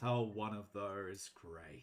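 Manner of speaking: muttered quietly under the breath. Narrating a scene, a man reacts to an excited Leah, muttered under breath. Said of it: "probably under his breath".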